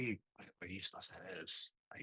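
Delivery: hushed conspiratorial whisper. Player in a game, hearing breathing from a room, asks companions: whispering. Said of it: "I'm gonna whisper it".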